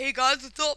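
loud, booming, belted video-intro style delivery. Retelling how a friend opens his video, imitating Mateo. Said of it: "he's like".

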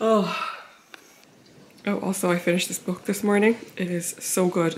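out of breath. Just after walking up the stairs, mentioning a book, out of breath. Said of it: "I'm like out of breath".

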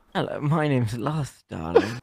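put-on British accent. Speaking as the persona Lust, introducing itself: British accent. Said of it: "Are you also British?".

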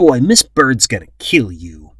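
loud, scornful, disgusted voice. A boy speaks to another boy who tried to break free in terror; disgusted. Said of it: "Kenny said disgustedly".

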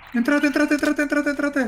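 urgent, calling voice.

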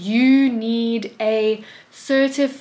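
put-on patronizing, talking down. Retelling how a man started speaking down to the speaker, imitating a condescending tone. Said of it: "He starts speaking to me like I'm an idiot".

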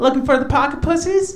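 cute, innocent chick voice, high, sweet and loud.

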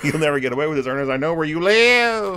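very high, loud, squeaky toy-doll voice. Describing a movie scene where the character does a voice for a doll: doll voice. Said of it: "he's doing a voice for a doll's".

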